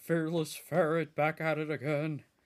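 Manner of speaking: campy superhero voice, TV hero style. A fan who loves mimicking his voice all the time does a line in an Adam West voice. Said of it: "I love mimicking his voice all the time".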